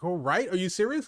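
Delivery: plain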